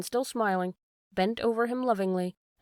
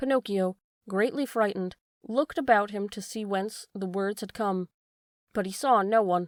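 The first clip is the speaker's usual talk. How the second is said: ordinary delivery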